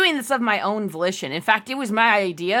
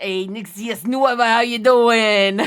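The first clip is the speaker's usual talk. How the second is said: breezy, put-on New Jersey accent; 4 dB louder than usual. Doing voices on request, greeting someone in a new jersey accent. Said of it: "New Jersey accent".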